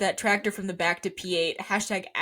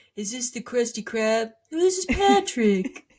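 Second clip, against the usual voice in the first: animated cartoon sidekick character voice; 2 semitones higher, 4 dB louder than usual. Quoting a cartoon line about a radio call: Patrick Star voice. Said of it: "He does talk like Patrick".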